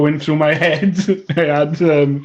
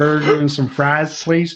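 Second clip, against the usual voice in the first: put-on Southern US accent. Asked if they can do southern too, the speaker orders in a southern us accent. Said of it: "can do southern too?".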